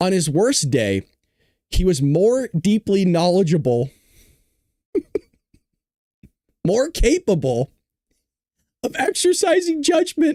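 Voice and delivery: tearful reading-aloud voice with swooping pitch. Reading a quoted passage aloud to listeners, crying while reading aloud. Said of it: "I'm crying".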